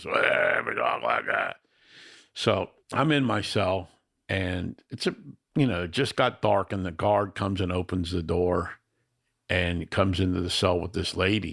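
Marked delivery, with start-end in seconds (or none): 0.0-1.6 very low, rough, raspy smoker's voice. Describing a woman, the speaker imitates her raspy cigarette voice. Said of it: "raspy heroin alcohol voice, cigarette voice".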